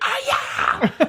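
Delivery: squeaky little whoop with gusto. Retelling a loud shout in a warm-up class: imitating a loud squeak. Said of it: "I squeaked really loud".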